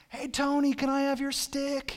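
high, loud shouting. Retelling calling down to a favorite player at games: imitating a yell to a player. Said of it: "we would yell down to our favorite player".

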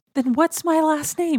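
high, loud hysterical panic. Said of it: "he's getting kind of hysterical".

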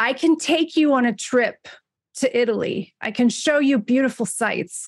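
put-on Long Island accent. Retelling how a man talked while the speaker and a friend laughed, Long Island accent. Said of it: "he's doing this like Long Island accent".

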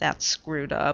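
plain reading voice

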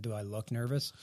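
mock flat, expressionless tone. Retelling a player's answer to a reporter's question: deadpan Jordan Binnington imitation. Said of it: "with this deadpan look and said".

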